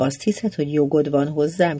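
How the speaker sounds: ordinary delivery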